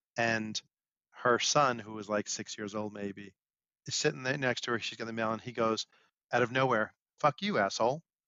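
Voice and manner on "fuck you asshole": play-acted blunt, matter-of-fact deadpan kid voice. Telling about a six-year-old boy at the mailboxes, retelling his deadpan curse. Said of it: "Just deadpan".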